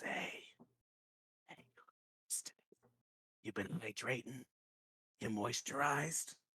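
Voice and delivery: hushed whisper in a talking-statue voice. Voicing a little statue that whispers to its owner: whispering statue voice. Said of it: "it whispers to me".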